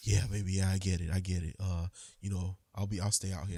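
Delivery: mock-sexy low voice. Retelling his reply after being told he can't be trusted, imitating his very sexy voice. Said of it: "in his very sexy voice goes".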